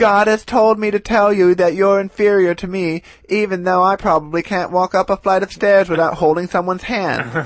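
put-on loud proclaiming voice. Retelling how he promoted the rally from a truck loudspeaker: imitating loudspeaker preaching. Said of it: "going around the neighborhood being like".

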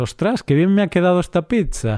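proud, high-pitched, self-satisfied boastful exclamation. Speaker acts out someone admiring the pizza they just made, mock-proud home cook. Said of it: "Claro, dices".

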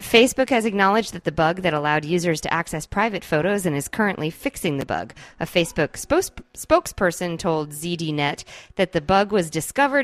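usual speaking voice

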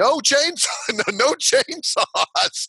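very high-pitched, slow, drawn-out cry. Retelling calling up to rescuers who want a chainsaw: retelling own yell. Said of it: "we start yelling".

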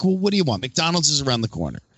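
sarcastic reply. Retelling own reply to a guest at a demonstration: imitating own sarcastic reply. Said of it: "I'm super sarcastic".

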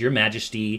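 normal talking voice

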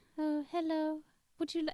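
mouse-like put-on voice. Mimicking how a female voice sounds, discussing it with another speaker: imitating a mousy voice. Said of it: "She's a bit of a mouse".

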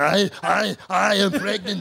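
every word stretched, pitched way up. Joking about the film Junior: Arnold Schwarzenegger impression. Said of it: "here's my Arnold Schwarzenegger".

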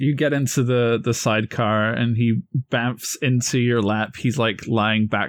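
ordinary delivery, nothing marked

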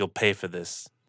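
whispered, very soft and very quiet. Voicing a prisoner being locked in the stockade: whispering. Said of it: "she whispers".

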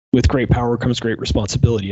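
normal talking voice

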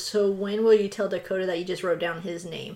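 ordinary talk, nothing marked

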